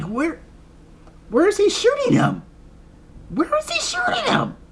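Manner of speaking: very high-pitched, incredulous disbelief. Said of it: "I'm like".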